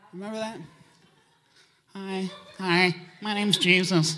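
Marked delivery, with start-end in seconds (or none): 1.9-4.1 small passive voice, slow and unhurried. Mocking old paintings of a passive little Jesus: passive little Jesus voice. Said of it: "The passive little Jesus".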